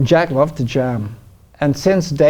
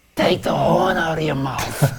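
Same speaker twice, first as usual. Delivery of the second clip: blunt, flat, straight-to-the-point tone; 2 semitones higher, 4 dB quieter than usual. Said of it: "[[name] says in [name] impression]".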